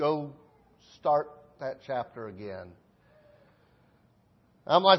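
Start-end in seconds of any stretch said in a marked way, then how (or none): 0.0-2.7 quiet voice, much quieter than before. Recounting reading the Bible, the speaker quotes words he heard quietly: quietly spoken words. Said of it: "the Holy Spirit just quietly says".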